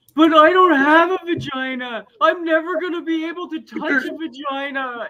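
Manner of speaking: put-on very high, drawn-out sobbing child's meltdown. Retelling a toddler son's meltdown after being told no: imitating a crying child's meltdown. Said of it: "he has a complete meltdown".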